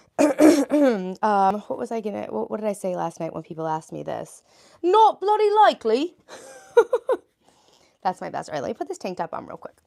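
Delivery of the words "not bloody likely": very high, loud, showy put-on British accent. Asked to do their best British accent, the speaker gives it a try. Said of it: "do your best British accent".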